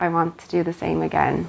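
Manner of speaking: normal talking voice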